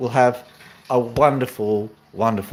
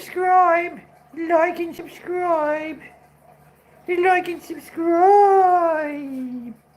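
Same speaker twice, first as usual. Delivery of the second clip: very high parrot voice with stretched-out words. Saying like and subscribe, then claiming the bird said it: Pony's bird voice. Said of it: "it was the bird's voice".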